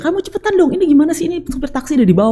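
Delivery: mock, very high, snapping scolding voice. Retelling hurrying a child while the taxi driver waited downstairs: imitating snapping at a child. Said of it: "Aku bentak dia".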